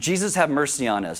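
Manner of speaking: ordinary delivery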